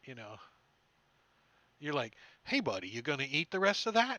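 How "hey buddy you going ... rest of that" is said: booming, loud, swooping put-on vulture voice. Teasing a player about their vulture character begging for scraps: imitating the vulture character. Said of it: "once you get into character".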